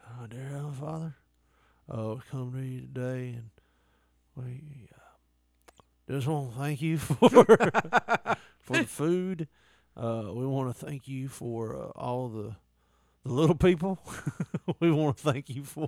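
put-on drowsy, half-asleep voice. Retelling how someone started a prayer, imitating someone sounding half asleep. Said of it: "he sounded like he was falling asleep during it".

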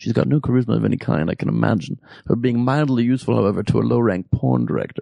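put-on wry, biting, drawled British accent. Quoting Hitchens's remark about Palin: Hitchens's wry biting British accent. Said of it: "wry, kind of biting British accent".

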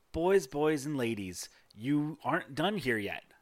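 playful, teasing woman's character voice. Voicing a tiefling woman who winks and waggles a finger: playful tiefling woman voice. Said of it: "winks one eye and gives you guys, like, a finger waggle and goes".

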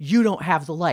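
put-on yelled line. Retelling a driver yelling at him from his passenger window, retelling a driver's yell. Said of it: "he rolls down his passenger window to yell at me something like".

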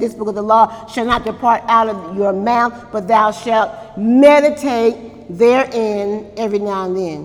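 usual speaking voice

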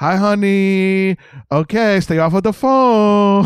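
very slow, drawn-out honey. Imitating the actor from a movie scene just watched: Tommy Wiseau impression. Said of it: "He's just like".

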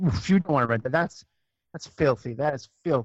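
mock stern, motherly, disapproving, almost angry scolding. Retelling a mother refusing a video rental: imitating mom almost angry. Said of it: "almost got angry at me".

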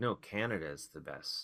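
normal talking voice

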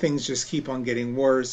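ordinary talk, nothing marked

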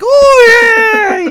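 very high, loud, gleeful, excited pet voice. Voicing the pet Chub Chub eating an ear: excited creature voice. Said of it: "He's all excited. He's like".

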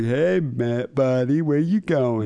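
slow voice, every word drawn out. Retelling what she said as she leans over: female Pauly Shore voice. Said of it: "She kinda sounds like the female version of Pauly Shore".

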